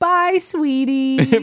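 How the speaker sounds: mock knowing, joking, amazingly sarcastic tone. Retelling how June said goodbye as they were leaving, imitating June's sarcastic goodbye. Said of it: "she said it with this amazingly sarcastic tone".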